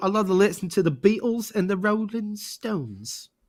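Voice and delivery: clumsy, bad, put-on fake English accent. Talking about bands they love from London: bad English accent. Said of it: "Now I'm gonna have to do my bad English accent".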